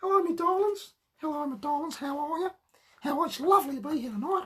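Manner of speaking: high, grand stage dame voice. Talking about the characters from their talk show, the speaker demonstrates: Dame Edna voice. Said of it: "Dame Edna".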